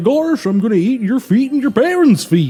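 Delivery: high silly cartoon voice. Retelling a childhood nightmare of him coming into the bedroom: Goofy impression. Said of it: "nailed that Goofy impression".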